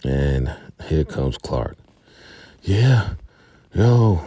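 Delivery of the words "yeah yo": put-on breathless voice, higher and louder. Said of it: "he's out of, out of breath".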